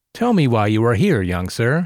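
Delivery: condescending drawl. A man at his desk asks a young visitor why he is here, patronizing drawl. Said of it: "he drawled, the utterance dripping with a patronizing tone".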